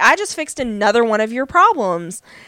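ordinary talk

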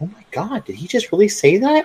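high, hushed half-whisper. Retelling what a friend half-whispered during a group hangout: imitating Anna half-whispering. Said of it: "And Anna whispers to me".

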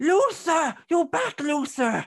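very high, shrill, entitled-sounding woman's voice. Narrating a story, a woman greets the returning Luther in a shrill, entitled voice. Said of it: "You hear a shrill voice going".

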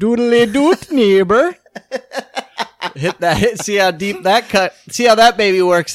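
put-on cartoon voice, Jamaican accent. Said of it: "a Ned Flanders Jamaican jerk practice impression".

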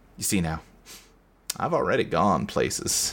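breathy, hushed near-whisper, energy drained, all verve gone. Retelling what Carl says after losing his verve: imitating Carl speaking quietly. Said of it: "he just kinda quiet is like".

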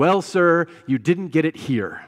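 fed-up, out-of-patience, exasperated delivery. Preacher retelling an usher's reply to a man in church, mock-exasperated. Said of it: "with some exasperation in his voice".

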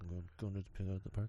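sheepish, very hushed, very soft. Retelling telling a trainer the afternoon plans: imitating own sheepish reply. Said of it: "and I very sheepishly".

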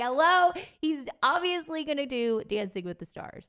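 put-on shouting.

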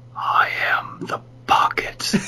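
soft, hushed, raspy near-whisper. Reading a story aloud, the masked figure speaks in a soft, raspy voice. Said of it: "Then it spoke in a soft, raspy voice".

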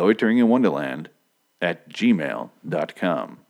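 very slow delivery. Host giving listeners the show's email address, very slow. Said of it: "If I say it slow".

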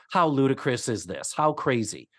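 ordinary delivery

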